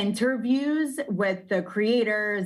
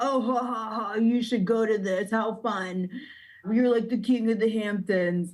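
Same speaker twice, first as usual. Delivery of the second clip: put-on dopey dumb guy voice. Retelling what a man's buddies told him about a casting call, in a dumb guy voice. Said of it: "That's like my dumb guy voice".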